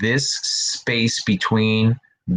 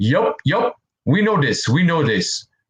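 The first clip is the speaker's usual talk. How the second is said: bad, horribly put-on Puerto Rican accent; 4 semitones higher than usual. Quoting someone from another stream last week, in a horrible Puerto Rican accent. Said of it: "it's a horrible Puerto Rican accent".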